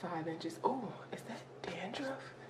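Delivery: soft whisper under the breath.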